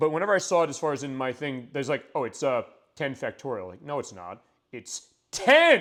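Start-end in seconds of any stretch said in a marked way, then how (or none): 4.7-5.8 loud yelled delivery. Joking about reading ten factorial, with a shouted 'ten'. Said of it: "You just yell it out".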